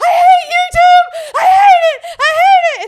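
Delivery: put-on crying voice. Retelling finding a friend in the car crying: imitating Kate crying. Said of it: "Kate is just crying to Cash".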